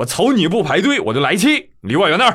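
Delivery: northeast China accent. A man scolds someone who cut the queue: forceful Northeastern Chinese dialect. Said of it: "现在你们知道东北话的魅力了吧".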